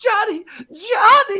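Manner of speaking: high, slow crying wail. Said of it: "they're like".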